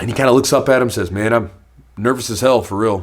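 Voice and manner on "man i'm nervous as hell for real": mock flat, stoic, deadpan monotone, no feeling shown. Speaker retells a fighter answering how he feels before a fight: retelling a flat monotone. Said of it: "he's saying it so monotone".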